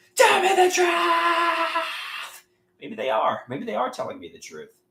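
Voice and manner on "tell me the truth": high, slow, loud scream. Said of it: "I wanna scream".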